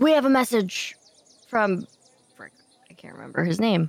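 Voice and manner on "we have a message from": yelling, higher. Addressing gate guards in character: shouting. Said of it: "I will shout".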